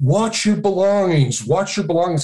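mock tour guide voice, high-pitched yell. Quoting your wife recalling the tour guide's warning; retelling a tour guide's yell. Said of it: "our tour guide yelling".

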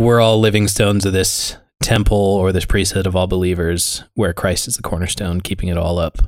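ordinary talk, nothing marked

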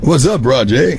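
relaxed, informal, casual tone, drawn out. Showing how a casual greeting sounds: casual natural voice. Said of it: "you know the difference?".

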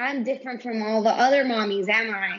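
usual speaking voice

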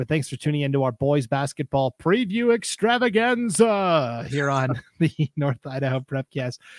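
upbeat, hyped commercial announcer voice. Podcast host thanking listeners at the close, Dave Smith Motors announcer voice. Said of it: "I sound like the announcer for Dave Smith Motors".

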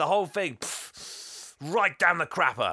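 high, angry, fed-up ranting blow-up, acted out. Retelling Santa blaming Fred for ruining Christmas: imitating Santa ranting. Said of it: "He's like".

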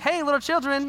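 put-on high-pitched, condescending voice like speaking to a toddler. Retelling a hippie on the beach greeting fishermen, mock talking to a toddler. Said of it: "like you're talking to a toddler".

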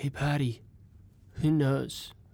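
soft, hushed, barely-there half-whisper. Down in the dark, the speaker turns to another person, half-whispering. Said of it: "I'm going to whisper to Patty".

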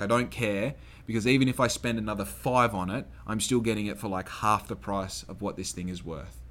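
plain

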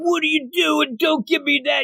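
high-pitched, far-off mock yell. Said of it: "He says".

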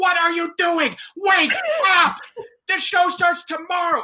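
mock shrill, very high screaming. Retelling how she started screaming at the chorus in the gym: imitating someone screaming. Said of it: "started screaming at us in the gym".

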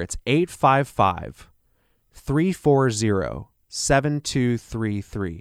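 slightly slowed pace. Repeating the phone number for listeners, a little slower. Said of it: "I'll say that a little slower".

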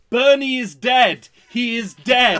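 loud high-pitched shouting. Recalling Elaine watching a movie at home, the speaker imitates Elaine shouting. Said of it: "just shouting at the screen".

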